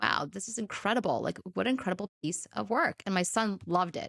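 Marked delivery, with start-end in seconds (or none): none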